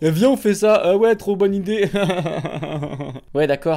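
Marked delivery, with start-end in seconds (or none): 0.0-1.9 put-on high-pitched, loud, drunken hyped-up voice. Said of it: "on a fait".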